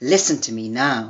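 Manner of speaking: voice taken down on final now. Showing how a sentence implies a command, voice drops on final 'now'. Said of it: "taking the voice down at the end of the sentence".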